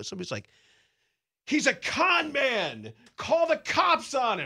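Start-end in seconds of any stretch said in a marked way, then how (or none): 1.5-4.5 very high, very slow, shrill, drawn-out screaming. Speaker recalls a stranger at a baseball tournament screaming about them; retelling someone screaming. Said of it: "I hear this screaming".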